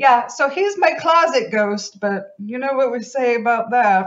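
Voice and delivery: put-on high, loud mid-century mid-Atlantic accent. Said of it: "mid-Atlantic, mid-century accent thing".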